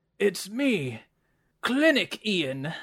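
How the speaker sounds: put-on weak, whispery old dwarf voice, high, slow, thin, drawn out. An old dwarf character introduces himself on arrival, Clinic Ian old dwarf voice.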